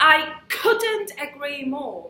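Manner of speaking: weight lands on the word couldn't. Teaching the phrase for agreeing, stress is on couldn't: stress on couldn't. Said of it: "the stress is on couldn't".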